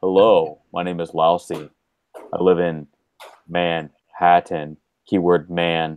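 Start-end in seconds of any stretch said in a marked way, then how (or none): 0.0-4.8 slow, unhurried, deliberate delivery. Doing a low voice-changer impression again: imitating Lousy. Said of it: "you sound like Lousy, exactly like Lousy".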